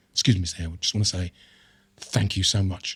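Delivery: put-on tearful, grateful voice. Retelling what a fan said to him, imitating a tearful fan. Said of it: "Tears strolling down their face".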